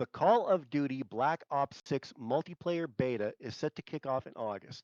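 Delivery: slow, each word deliberately and carefully enunciated. Retrying a line after stumbling over it, slow and enunciated. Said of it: "I'll say it slow and enunciate".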